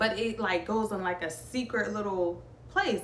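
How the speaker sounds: usual speaking voice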